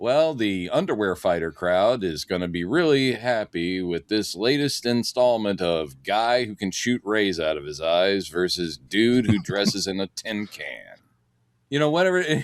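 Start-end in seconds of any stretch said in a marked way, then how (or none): none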